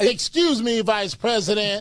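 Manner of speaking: put-on female voice. Imitating a debate line to a co-host: Kamala Harris impression. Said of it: "a female impersonation of Kamala Harris's".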